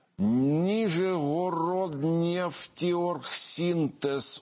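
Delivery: high, slow, drawn-out, careful spelling-out.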